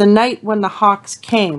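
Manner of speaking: plain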